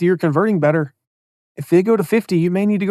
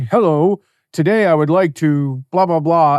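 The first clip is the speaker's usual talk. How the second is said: very formal, stiff, corporate-sounding tone; 2 semitones lower than usual. Advising on consistent email style, showing an overly formal opening, stiff corporate voice. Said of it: "And you're really corporate in your emails".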